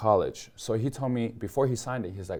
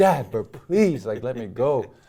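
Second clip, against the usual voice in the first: loud, drawn-out, play-acted pleading voice; 2 semitones higher, 5 dB louder than usual. Retelling a childhood night, acting out begging dad to let them go. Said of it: "And I'm begging my dad".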